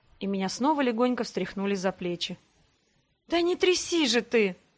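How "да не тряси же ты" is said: feeble, languid indignation, high and slow. Being shaken by the shoulders, she protests to the one shaking her, feebly indignant. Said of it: "вяло возмутилась я".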